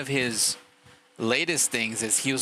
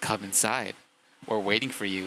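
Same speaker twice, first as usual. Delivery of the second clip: put-on creepy, eerie robot voice; 3 semitones lower than usual. Retelling what an updated security AI says to intruders: imitating a creepy robot voice. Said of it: "it sounds super creepy".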